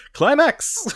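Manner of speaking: thrilled, very excited, very high-pitched. Showing how the show's title should be said: very excited. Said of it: "very excited".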